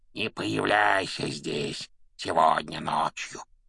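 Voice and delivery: creaky, rasping voice. Harry, invisible, speaks to Peeves in a creaky, rasping voice. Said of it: "проскрипел Гарри".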